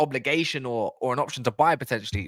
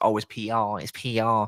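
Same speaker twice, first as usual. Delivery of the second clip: very slow, drawn-out, mocking little voice; 4 semitones lower than usual. Mocking a critic who keeps calling it PR: mocking little voice. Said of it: "when he does that little voice".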